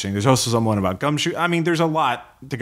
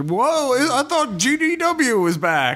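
put-on high, slowed-down, angry grumbling old man voice. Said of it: "angry old grognards".

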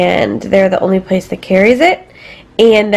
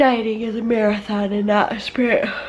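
soft delivery, talking through a yawn; 9 dB quieter than usual. Talking about dieting, saying the line through a yawn. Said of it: "Sorry, I'm yawning".

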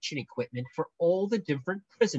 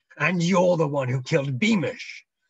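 loud, harsh snarling voice; 2 semitones higher, 7 dB louder than usual. Retorting to a man who is bored of being bossed by him, snarling. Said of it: "snarled Spittleworth".

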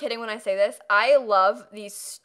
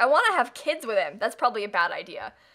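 ordinary talk, nothing marked

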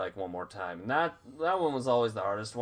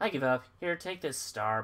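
irritated voice, pitched higher; 4 semitones higher than usual. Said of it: "you sound annoyed".

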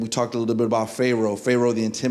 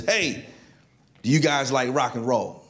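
put-on light, mild called-out holler; 2 semitones higher than usual. Retelling a man yelling down from the top of a house: retelling a man's yell. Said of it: "he was yelling at us".

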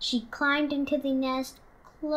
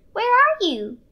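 small, squeaky, high creature voice; 8 semitones higher, 5 dB louder than usual. Reading the story aloud, a baby bat calls for her mother: Stellaluna's squeak. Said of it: "Stellaluna squeaked".

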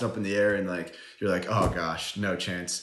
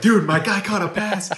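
mock overjoyed yell, very high and very loud; 12 semitones higher, 9 dB louder than usual. Retell how a player reacted after a football play, imitating someone excited. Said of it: "James Daniels was more excited than Bobby was".

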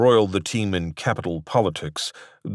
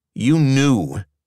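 pitched-up, accusing, blaming tone; 6 semitones higher, 4 dB louder than usual. Narrator reads Daniel confronting Ronson, who arranged it, accusingly.

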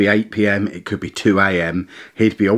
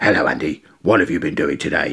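goofy puppet voice; 5 semitones lower than usual. Retelling a bedtime hand-puppet routine: Mister Hand funny voice. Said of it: "do a funny voice".

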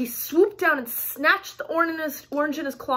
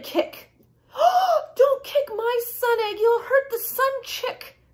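high, drawn-out, tearful crying; 9 semitones higher than usual. Narrator reads an elf's protest, crying out. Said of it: "cried the elf".

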